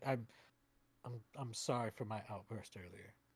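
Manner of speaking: soft mumble, half under the breath, in passing. Game master voicing a man walking past the player to his bunk, mumbling. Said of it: "he kind of mumbles as he passes you".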